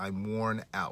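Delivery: ordinary delivery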